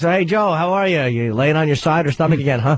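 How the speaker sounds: badly acted delivery with a fake-casual tone. Retelling how a doctor poorly faked a casual question: imitating a bad actor's fake-casual line. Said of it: "he wasn't a good actor".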